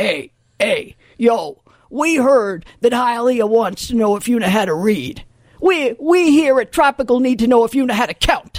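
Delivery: rough, gruff, hard-nosed tough-guy voice. Retelling a phone call from a caller at tropical, in a gruff voice. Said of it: "a different gruff voice saying".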